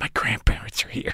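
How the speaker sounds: soft, breathy whisper with no voice. Retelling what a friend whispered at the theater: imitating a whisper. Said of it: "whispers to me".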